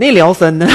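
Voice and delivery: put-on comic Northeastern US accent.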